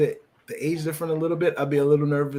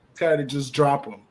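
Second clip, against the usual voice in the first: ordinary talk, nothing marked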